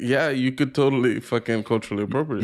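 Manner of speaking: normal talking voice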